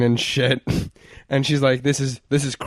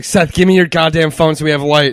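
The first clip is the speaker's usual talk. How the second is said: put-on screaming, louder; 3 semitones higher, 5 dB louder than usual. Recounting waking up in a panic and demanding a phone for light, retelling own screaming. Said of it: "punching the walls and screaming".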